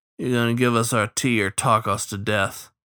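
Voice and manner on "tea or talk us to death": ordinary delivery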